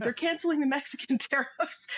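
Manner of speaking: mock excited yell. Retelling how a colleague ran out of an office: imitating someone yelling.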